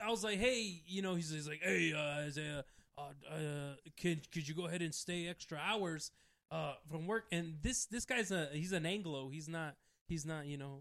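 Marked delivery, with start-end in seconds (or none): 1.6-7.2 put-on shady, shifty-sounding voice. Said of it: "Why is this person so shady sounding?".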